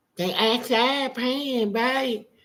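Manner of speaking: put-on childlike little kid voice. Speaker retells a story, voicing a child answering a woman's questions, talking like a little kid. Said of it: "talk like a little kid".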